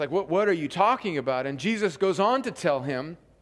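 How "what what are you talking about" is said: ordinary delivery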